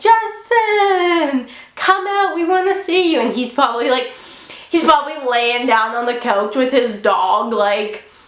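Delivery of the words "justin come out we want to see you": mock high drunken screaming, one word stretched long. Retelling screaming at a tour bus while drunk: imitating own drunk screaming. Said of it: "being drunk [name], screaming".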